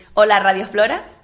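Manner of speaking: ordinary delivery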